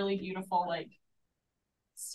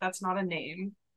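normal talking voice

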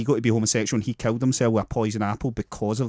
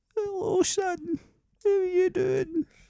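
put-on very high-pitched little old lady voice; 3 dB quieter than usual. Asked to give their old woman voice: old woman voice. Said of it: "Give us your old woman voice then".

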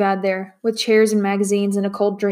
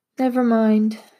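with a sigh. Felicia turns down Matt's offer to call a maid, sighing. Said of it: "Felicia sighed".

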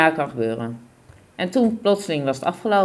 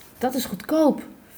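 very high-pitched whispered aside; 9 semitones higher than usual. Seated beside her, he whispers a reply, whispered. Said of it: "fluisterde Paul".

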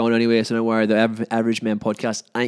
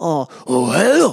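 Japanese accent, much higher, louder; 5 semitones higher, 5 dB louder than usual. Showing off the different accents they can do, greeting in a Japanese accent. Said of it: "This is more the Japanese".

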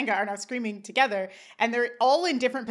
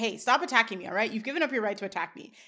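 plain

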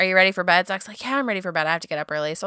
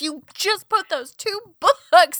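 put-on angry man's voice, mock-angry tone; 9 semitones higher than usual. Retelling how a man reacted to something they did, imitating an angry man. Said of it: "if he wasn't so mad about it".

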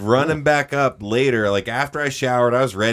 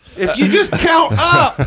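high, slow, loud freaked-out shout. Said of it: "she was freaked out".

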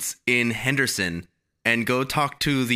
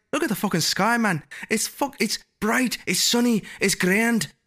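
put-on Irish accent, much higher pitch; 11 semitones higher than usual. Retelling a talk with Patty, who grew up in Ireland, imitating Patty's Irish accent. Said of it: "bleeding into his accent".

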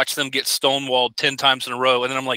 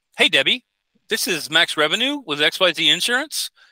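lilting, high, swooping phone inflection; 4 semitones higher than usual. Calling in as an insurance salesman asking for the decision maker, high inflection tone. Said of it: "with a high inflection tone".

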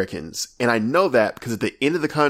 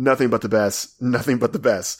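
normal talking voice

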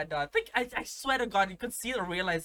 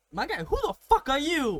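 very high-pitched, loud yelled shout; 9 semitones higher, 6 dB louder than usual. Retelling an argument with a stranger shouting at him outside, retelling shouting back. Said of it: "I'm like shouting at him".

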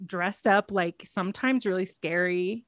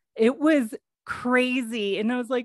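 ordinary talk, nothing marked

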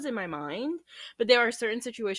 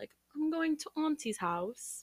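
bad fake proper British accent, high and slow; 7 semitones higher, 5 dB quieter than usual. Imitating a proper British child saying auntie: bad British accent. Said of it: "that was a really bad British accent".

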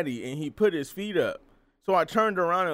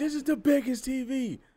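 mock very high shrieking little kid scream; 9 semitones higher than usual. Retelling what a child shouted in the movie theater: imitating a child screaming. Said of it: "He screamed out loud".

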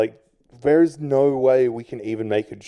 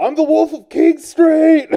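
put-on high, loud drunken screaming and screeching; 7 dB louder than usual. Recalling the man who fired him, imitating Diamond's drunk screaming. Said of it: "fucking loaded, screaming".

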